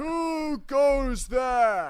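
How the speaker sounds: odd monster or ogre voice, way up, very loud. Showing voice acting skill as an ogre: weird ogre voice. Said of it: "I'm gonna stop doing my weird ogre voice".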